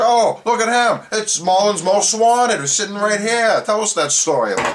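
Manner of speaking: high, loud, teasing, mocking crowing cheer.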